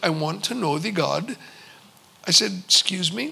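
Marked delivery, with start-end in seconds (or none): 0.0-1.4 put-on thick Indian accent, low and soft. Retelling what a gentleman across the desk said to him, in a thick indian accent. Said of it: "in a very thick Indian accent".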